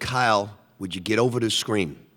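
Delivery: normal talking voice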